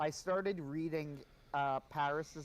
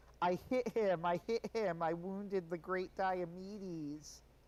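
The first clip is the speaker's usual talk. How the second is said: slow, drawling, put-on effeminate voice; 4 semitones higher than usual.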